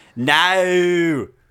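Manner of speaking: put-on loud, drawn-out Australian accent, vowels stretched. Answering a question in a joke impression: Australian accent impression. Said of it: "my Australian one".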